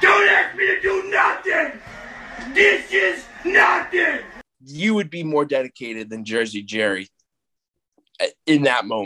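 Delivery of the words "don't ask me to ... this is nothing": put-on very high, stretched-out, drawn-out screaming. Acting out a man who lives at home screaming at his mom: retelling a scream. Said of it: "He's screaming at his mom".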